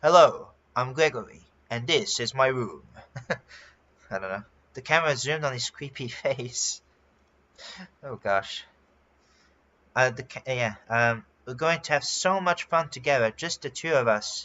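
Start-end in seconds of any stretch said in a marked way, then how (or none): 0.0-2.8 synthetic, robotic text-to-speech computer voice. Repeating a character's greeting, this time in a text-to-speech voice. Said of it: "in a text-to-speech voice".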